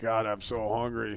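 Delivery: mock slurred drunken voice. Imagining being drunk and finding food: pretend drunk voice. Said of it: "drunk and you're like".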